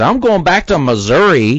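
put-on high, fed-up, angry outburst. Describing a scene where a character gets angry, imitating an angry outburst. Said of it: "she gets pissed later and she says".

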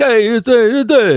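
put-on very high-pitched Italian-American accent. Describing a movie character to someone who is guessing, in the Guido voice.

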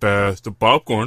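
deepest possible voice. Taking the first turn in a game of who can go deepest, deepest voice possible. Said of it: "Who can go the deepest".

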